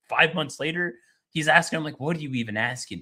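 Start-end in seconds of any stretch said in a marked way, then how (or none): 2.0-3.0 mock dismissive, incredulous disbelief. Retelling a leader answering a reporter: imitating an incredulous retort. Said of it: "looking at them like they're stupid".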